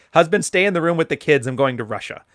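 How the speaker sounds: usual speaking voice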